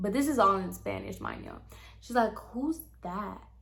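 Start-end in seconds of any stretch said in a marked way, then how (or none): 2.3-3.4 very quiet, breathy, barely audible whisper. Retelling what a woman whispered to her sister-in-law, imitating a whisper. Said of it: "whispering to her".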